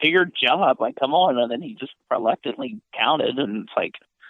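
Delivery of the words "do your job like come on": loud, furious, angry screaming. Retelling a wrestler screaming at the referee to count: imitating Orton screaming. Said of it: "That's what Orton was screaming at".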